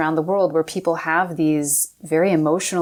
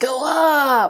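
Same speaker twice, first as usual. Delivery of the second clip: very high voice, pushed out, strained with effort; 9 semitones higher than usual. Demonstrating Pilates instructions given while doing the move, strained with effort. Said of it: "infuse the instructions with strain as you do them".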